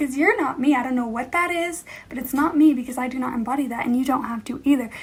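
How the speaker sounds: ordinary talk, nothing marked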